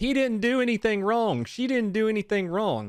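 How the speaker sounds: mock high-pitched crowd screaming. Retelling bystanders at a scene: imitating people screaming.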